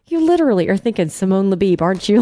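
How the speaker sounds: ordinary delivery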